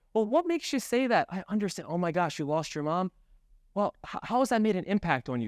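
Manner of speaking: gently inquisitive, curious, caring and empathetic tone. A trainer demonstrates probing questions in the discovery step, curious, empathetic tone. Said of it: "open up with your curious tonality".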